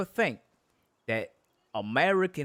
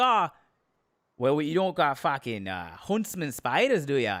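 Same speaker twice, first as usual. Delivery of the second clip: bad mock Australian accent impression. Acting out what people from Australia would say to them, in a bad Australian accent. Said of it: "That was four different accents".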